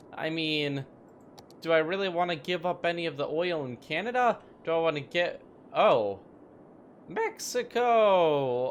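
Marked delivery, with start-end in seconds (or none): 7.1-8.8 voice breaking. A player picks a country mid-sentence in a game: voice crack. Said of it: "that voice crack".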